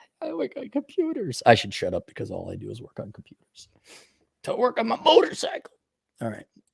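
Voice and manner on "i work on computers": very high, derisive, mocking voice. Mocking the soy boys who work on computers: mocking a soy boy. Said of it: "You wanna be like the soy boys".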